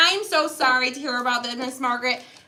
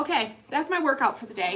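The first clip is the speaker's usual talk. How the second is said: usual speaking voice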